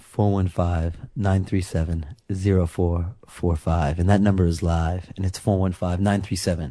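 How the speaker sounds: seductive low voice. Show host reading out the call-in phone number, in a put-on sexy voice. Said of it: "Rob will make his sexy voice now".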